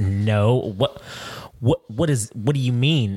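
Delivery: put-on disgusted tone. Retelling how a woman answered being called Karen: imitating a disgusted reply.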